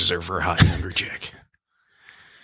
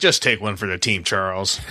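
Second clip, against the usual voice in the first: ordinary delivery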